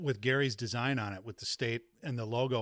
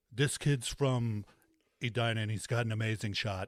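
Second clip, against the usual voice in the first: weird, off-kilter, wonky put-on voice. Imitating a hockey broadcaster calling a high school tournament: Lou Nanne impression. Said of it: "He kinda has this weird Trump voice almost".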